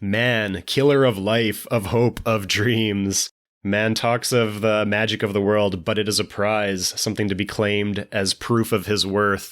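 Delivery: plain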